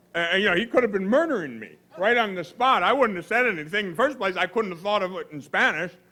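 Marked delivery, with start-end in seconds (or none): none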